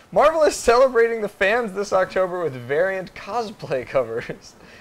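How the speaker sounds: fighting back laughter. Host rereads a news item after laughing, holding back a laugh. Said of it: "let's try and read that without laughing".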